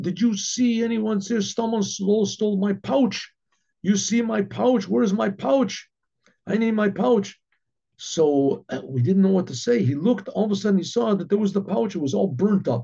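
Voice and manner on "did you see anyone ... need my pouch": put-on scream, higher pitch. Retelling how the Baron came out demanding his pouch: imitating someone screaming. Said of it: "he starts screaming".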